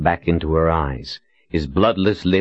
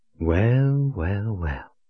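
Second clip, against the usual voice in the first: smooth, velvety voice gliding out; 3 semitones higher, 3 dB quieter than usual. The witch woman Shota greets Colin, in her velvety voice. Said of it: "Shota said in her velvety voice".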